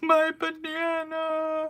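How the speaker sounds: play-acted high crying wail. Retelling an outing, the speaker mimics Val after she dropped her banana: imitating Val crying. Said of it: "she started crying like".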